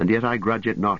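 ordinary talk

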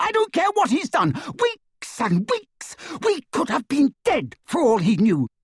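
high-pitched scream at full tilt. Hermione answers Harry and Ron, screaming. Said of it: "she screamed".

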